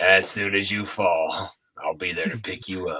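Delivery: very low, creepy dude-bro voice. Retelling a guy at the mosh fence: creepy redneck dude bro voice. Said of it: "that was my impression of what they made".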